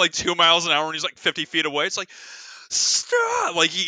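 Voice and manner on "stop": very high, desperate scream. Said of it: "he's screaming like he's about to die".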